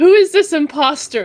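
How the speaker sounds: put-on accusing yell, loud and high. Confronting a look-alike on entering the room: yelling in character. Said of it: "So I'm gonna yell out".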